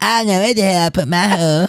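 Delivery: cheesy, high-pitched cartoon voice. Joking around with another speaker, redoing the line in a cheesy Cartman voice. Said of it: "more cheesy voice".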